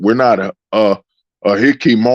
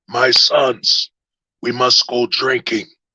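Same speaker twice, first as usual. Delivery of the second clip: put-on old martial-arts sensei voice; 4 dB quieter than usual. Speaker acts out a scene, doing the Master Splinter voice. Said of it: "that Master Splinter voice".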